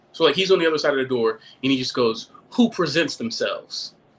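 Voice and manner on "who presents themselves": put-on heavy Caribbean accent, laid on thick. Speaker retells a man behind a door questioning him, in a strong caribbean accent. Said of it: "there's this strong Caribbean accent".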